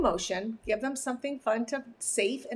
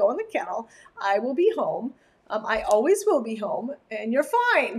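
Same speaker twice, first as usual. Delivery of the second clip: normal talking voice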